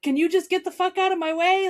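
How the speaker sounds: all-out, high, loud scream. Retelling yelling at a car that would not move: retelling a scream. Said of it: "I'm screaming at it".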